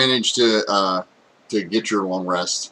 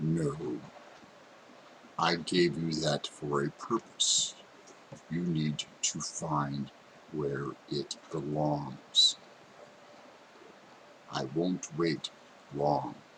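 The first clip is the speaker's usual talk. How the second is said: very deep, hushed, slow, drawn-out spirit voice; 5 semitones lower, 13 dB quieter than usual. Storyteller voicing a figure who speaks to a player's character, very deep voice. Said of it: "It's like this very deep, / It's like this very deep".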